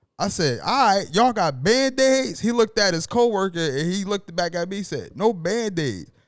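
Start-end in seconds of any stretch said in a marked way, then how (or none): 5.2-6.1 put-on Caribbean accent. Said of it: "he said it in his in his Haitian or Jamaican accent".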